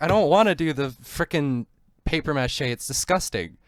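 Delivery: put-on angry, mouthy outburst with a sarcastic edge. Retelling a clash with her at school, retelling own angry outburst. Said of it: "I started like getting mad".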